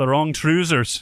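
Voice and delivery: attempted put-on Scottish accent. In a joking group conversation, trying out a Scottish accent. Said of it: "there's my Scottish accent".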